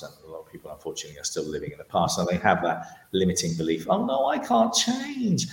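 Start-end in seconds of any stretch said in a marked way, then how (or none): 3.9-5.5 silly put-on voice, very high and very slow. Mocking people living in the past, in a ridiculous put-on voice. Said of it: "I do this voice because I'm trying to make it sound ridiculous".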